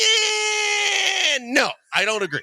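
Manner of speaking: very high, very slow, long drawn-out disagreeing eh. Retelling a co-host disagreeing on air: Charlie's voice. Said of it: "that's kinda Charlie's voice".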